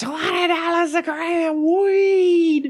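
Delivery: very high, loud hawking street shout.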